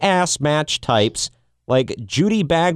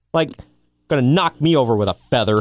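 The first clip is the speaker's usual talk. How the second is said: usual speaking voice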